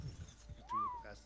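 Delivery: high, slow, stretched-out howl like wind. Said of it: "It's kinda sounds like ... the wind is howling past your house".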